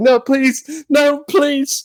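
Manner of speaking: mock sobbing, very high, slow and drawn out. Retelling a fight, imitating a beaten kid begging: imitating someone crying. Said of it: "he's literally crying at this point".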